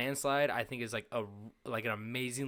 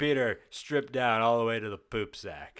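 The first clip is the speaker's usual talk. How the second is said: loud, called-out cartoon voice; 5 dB louder than usual. Retelling a scene from an episode, quoting Joe: imitating Joe. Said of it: "Joe goes".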